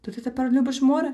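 careful tone. Narrator reading Moomintroll's question to his father, asking cautiously. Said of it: "обережно поцікавився мумітроль".

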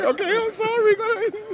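very high, squeaky, sheepish voice. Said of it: "Why is he screaming so loud?".

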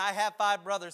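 loud, desperate, anguished cry of a man. Voicing the rich man in torment from the scripture: imitating a man screaming. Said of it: "He's screaming".

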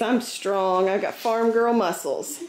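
ordinary talk, nothing marked

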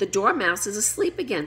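plain reading voice

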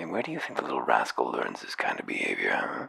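very low, secretive, conspiratorial half-whisper. A woman leans across the counter to speak, in a conspiratorial half-whisper. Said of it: "speaks in a conspiratorial whisper".

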